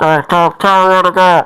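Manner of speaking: poor-quality radio sound. Voicing the driver over an old radio system: crackly old radio voice. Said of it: "it kinda comes through crackly through the".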